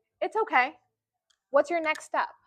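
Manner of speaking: very calm, unruffled, neutral, even tone. Imitating an attending who doesn't yell when things go wrong: imitating a very calm neutral tone. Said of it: "very calm, very, like, neutral tone".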